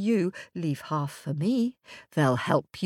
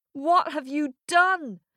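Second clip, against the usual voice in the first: high, alarmed shout, voices crying out together; 7 semitones higher than usual. The older sisters cry out after a raven carries off their little brother: shouting. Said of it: "Shouted the older sisters".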